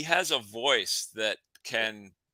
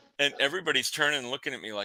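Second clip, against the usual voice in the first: usual speaking voice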